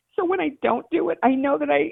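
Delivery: high, welling-up, emotional voice. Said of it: "I don't know why I'm getting emotional".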